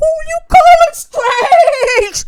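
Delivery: screaming. In a podcast skit, a character answers another character, screaming. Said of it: "What are you screaming?".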